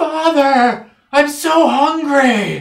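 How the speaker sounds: unearthly, inhuman scream, very high and loud. Narrating to the players, a voice screams from beneath the church floor: inhuman screaming voice. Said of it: "this voice that screams out".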